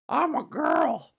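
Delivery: high, mocking, teasing voice. Retelling what she used to say about herself, in a mocking voice. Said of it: "I would say it mockingly".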